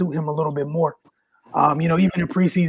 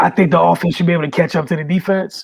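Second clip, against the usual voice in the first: plain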